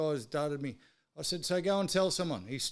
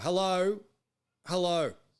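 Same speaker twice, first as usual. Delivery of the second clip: play-acted loud, impatient, fed-up yell; 3 semitones higher, 5 dB louder than usual. Retelling how nobody took his drive-through order, acting out yelling into the receiver. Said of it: "I'm yelling into the receiver".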